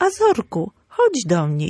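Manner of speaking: calm, firm tone with swooping intonation. Calling the dog over, stating a decision without shouting: calm, firm, not shouted. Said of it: "I nie krzyczę, tylko oznajmiam decyzję".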